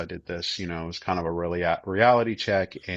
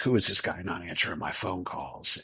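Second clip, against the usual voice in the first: mock-indignant, acted-out livid fury; 4 dB quieter than usual. Retelling calling a man who wouldn't answer, acting out his own livid reaction. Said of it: "I'm livid".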